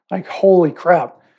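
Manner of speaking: ordinary talk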